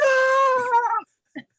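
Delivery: very high, one-word scream. Retelling a man on the drawbridge urging her on: imitating someone screaming. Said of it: "and he's like".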